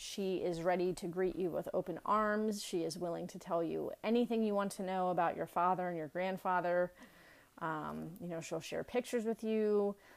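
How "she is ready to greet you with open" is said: usual speaking voice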